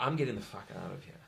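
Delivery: calm, soft, quick, hushed delivery. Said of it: "doesn't go out and make a loud noise".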